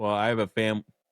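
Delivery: plain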